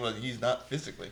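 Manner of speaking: acted cheeky, sassy, pointed tone. Retelling a film character's comeback about the man: imitating a sassy reply. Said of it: "a sassy".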